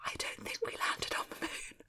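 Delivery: secretive, hushed, very quiet, barely voiced whisper. Chatting with a co-speaker after announcing it will be whispered, whispering. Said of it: "I'm going to whisper this".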